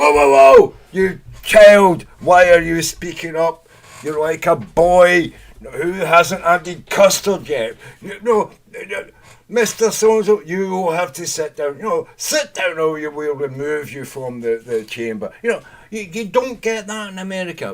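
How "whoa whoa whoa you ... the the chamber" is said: very loud, prim, booming voice. Describing British parliament to listeners, imitating the Speaker of the House. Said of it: "like the, the Speaker of the House".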